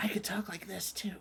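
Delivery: soft, breathy whisper, hushed right down. Showing the players that the sleeper-car talk can be done whispering: whispering. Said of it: "I learned how to whisper".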